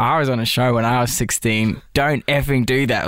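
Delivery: ordinary talk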